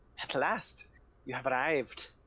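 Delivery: put-on crackly old crone voice. As narrator, voicing the hunched crone's greeting in a crackling crone voice. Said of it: "her voice crackles like dry wheat".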